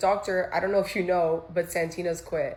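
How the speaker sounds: ordinary talk, nothing marked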